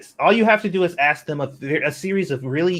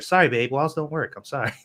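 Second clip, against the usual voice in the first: ordinary talk, nothing marked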